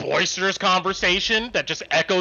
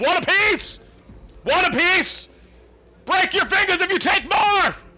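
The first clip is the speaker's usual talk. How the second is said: high, shrieking screaming voice; 13 semitones higher than usual. Voicing soldiers handing out rations from a wheelbarrow: screaming soldiers. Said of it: "and they're screaming".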